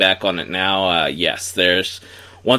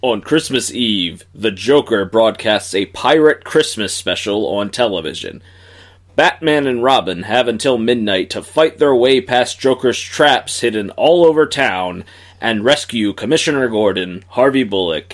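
broadcast announcer voice; 3 semitones higher, 4 dB louder than usual. Reading an episode synopsis aloud as asked, in announcer voice. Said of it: "in your best announcer voice".

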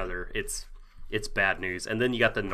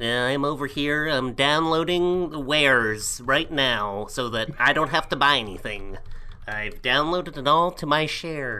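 nerdy voice; 4 semitones higher than usual. Arguing with a co-host about what pirates sound like, nerdy voice. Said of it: "that is [name]'s audition for Revenge of the Nerds 3".

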